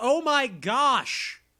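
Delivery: high, frantic, panicked shout. Retelling what he yelled when he thought he would be eaten next: retelling his yell. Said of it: "He yells".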